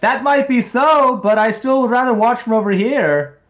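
very high-pitched, loud in-character yelling. Playing a character who yells at Avarin: yelling in character. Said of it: "I'll yell at Avarin".

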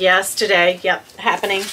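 usual speaking voice

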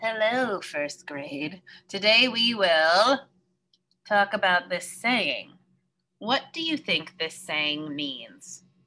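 slow, drawn-out put-on spider character voice. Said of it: "I'll use my spider voice for this".

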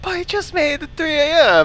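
excited, high, thrilled cheer blurted out.

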